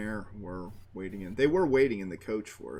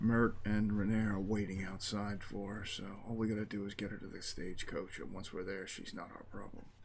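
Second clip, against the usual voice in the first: very quiet, hushed voice; 6 dB quieter than usual. Speaking in character, leaning over to Joanna: very quiet voice. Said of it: "I'll very quietly say".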